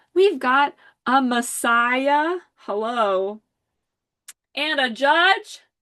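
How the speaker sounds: loud screaming full of excitement. Announcing the archetypes that came up together, excited screaming. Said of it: "I'm sorry I'm screaming".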